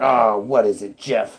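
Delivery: put-on uninterested, dismissive, can't-be-bothered manager voice. Acting out a pretend call, the manager answers while eating, imitating an uninterested boss. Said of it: "he's eating or whatever, and he doesn't even want to talk to you".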